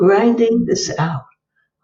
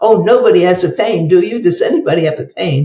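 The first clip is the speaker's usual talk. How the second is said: playful, ribbing, poking-fun tone, acted out. Retelling asking a bookstore crowd about pain, imitating a playful tease. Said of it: "to make almost fun of the fact".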